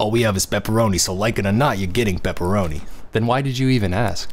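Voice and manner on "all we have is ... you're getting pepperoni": put-on clerk character voice with attitude. Reading a game character's lines while ordering pizza: put-on voice for the pizza character. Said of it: "Kinda regretting giving her the, this voice now".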